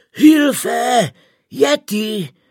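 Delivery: wheezing, gasping with terror. A German climber hears a horrible roar for the third time; terrified wheeze. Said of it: "zasýpal jeden z německých horolezců zděšeně".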